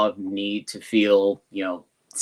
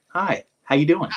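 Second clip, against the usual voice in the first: fake, pitched-up, cheery, happy-go-lucky voice; 8 semitones higher than usual. Speaker acting out a friendly greeting, in a fake happy-go-lucky voice. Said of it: "put on my happy-go-lucky civilian voice".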